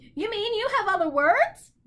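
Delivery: delighted, bright, high, happy exclamation. A narrator reads a bird's reply to Milo, crying out happily. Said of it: "cried the bird happily".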